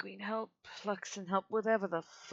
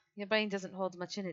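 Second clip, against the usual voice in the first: plain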